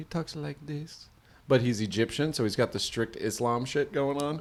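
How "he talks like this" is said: put-on soft-spoken man's voice, quieter. Describing a man on a show who talks very soft-spoken. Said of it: "very soft-spoken".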